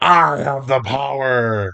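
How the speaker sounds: slow, drawn-out fish monster voice. Voicing the fish boss beyond the door: fish boss voice. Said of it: "this, you assume, fish boss".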